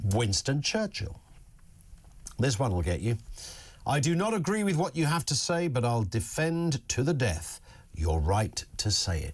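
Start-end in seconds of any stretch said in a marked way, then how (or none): none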